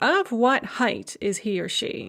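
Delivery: ordinary talk, nothing marked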